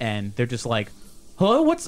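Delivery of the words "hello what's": high, loud, panicked cry, freaking out a little. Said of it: "they're starting to freak out".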